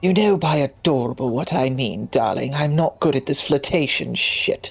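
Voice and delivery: low whispering. In a role-play, a character hugs another and whispers in her ear: whispering. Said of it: "she whispers in her ear".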